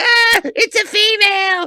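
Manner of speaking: very high, loud, drawn-out shrieking outburst. Retelling the last scene, imitating the Grand Nagus flipping out. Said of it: "when he flips out and he's like".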